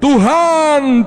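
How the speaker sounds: calling out loudly.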